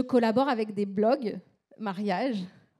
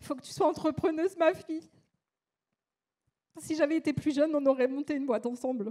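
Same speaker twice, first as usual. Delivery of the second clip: high, tearful voice, close to crying; 5 semitones higher than usual. Quoting the last words of a father who died, about to cry. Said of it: "et là je vais pleurer bien sûr".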